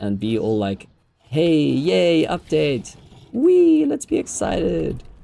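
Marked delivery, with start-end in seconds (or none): 1.2-5.0 very slow, high, swooping fake cheerful energy. Acting out posting an update in the general chat: mock upbeat excitement. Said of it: "Fresh energy. Upbeat vibes".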